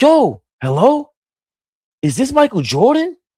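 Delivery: very high, wild, swooping, starstruck excited call. Retelling a childhood prank call to a man named Michael Jordan, retelling own excited freakout. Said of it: "we went crazy like".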